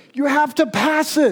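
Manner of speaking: high, loud calling-out voice.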